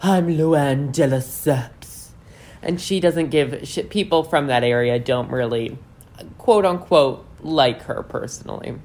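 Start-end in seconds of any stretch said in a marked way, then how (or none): 0.0-2.1 very slow, dragged-out, raspy drawl. Imitating Luann walking into every store in her hometown, in a raspy Luann voice. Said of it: "she says in that very raspy Luann voice".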